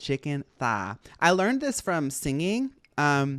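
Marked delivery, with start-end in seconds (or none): 0.0-1.0 put-on Southern US accent. Teaching someone to do the accent by smiling through everything, in a put-on southern accent. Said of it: "I'm teaching everybody how to do a southern accent".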